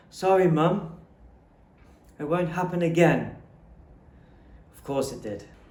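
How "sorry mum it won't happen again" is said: shaky, trembling, scared voice. Retelling an apology to an angry mother: imitating a trembling, scared voice. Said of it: "My voice trembled like a broken string".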